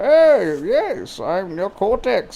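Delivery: very slow, deliberate sing-song with swooping pitch. Guessing aloud how Neocortex talks: Neocortex voice. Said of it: "Is that how he sounds?".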